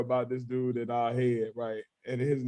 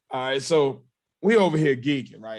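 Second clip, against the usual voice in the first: normal talking voice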